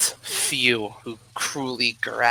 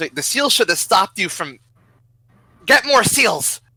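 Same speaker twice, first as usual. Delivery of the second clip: high, shouted alert; 9 semitones higher, 6 dB louder than usual. Voicing a guard who is surprised and calls for more seals: guard yelling. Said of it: "the guard yells".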